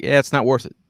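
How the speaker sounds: ordinary delivery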